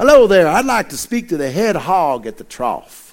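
deliberately bad, exaggerated, put-on Texas accent. Telling a joke, voicing a texan caller phoning a church, in a texas accent. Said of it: "I'm going to give you my best Texas accent".

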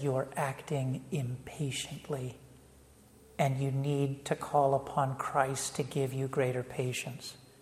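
very quiet, soft, low, calm, bold and patient.

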